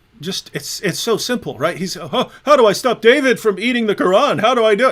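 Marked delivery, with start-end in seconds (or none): 1.9-4.9 dumb-sounding, high and loud. Mocking an opponent by acting him out: mocking Hijab impression. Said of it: "It's a character".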